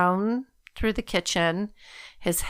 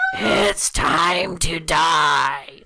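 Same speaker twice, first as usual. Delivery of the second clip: deep, very slow demonic voice, drawn-out "die"; 4 semitones lower, 5 dB louder than usual. Retelling how a possessed person's voice changed: put-on devil voice. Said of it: "that's my devil voice".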